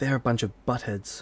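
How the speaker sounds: close, hushed whisper. Asked what other elves are like, she whispers in your ear. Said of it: "She whispers in your ear".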